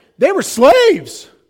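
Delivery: fake voice crack. Teaching on verse 8, voicing what some would say, with a fake voice crack. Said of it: "You notice the crack in my voice there?".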